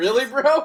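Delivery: very loud, high-pitched, incredulous exclamation. Voicing Connor, looking at another character in disbelief. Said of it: "Connor's going to look at Isaiah like".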